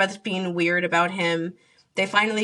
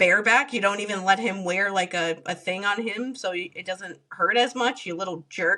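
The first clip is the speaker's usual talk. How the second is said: usual speaking voice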